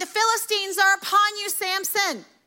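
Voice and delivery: play-acted, high-pitched yelled cry. Retelling the Samson story, acting out her line to Samson, retelling a yell. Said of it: "she's yelling".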